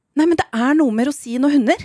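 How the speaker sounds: put-on total panic. Retelling someone's reaction to the dogs getting raisins, imitating someone panicking. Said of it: "får Nicolas totalt panikk".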